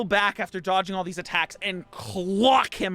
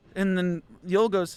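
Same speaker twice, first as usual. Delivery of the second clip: plain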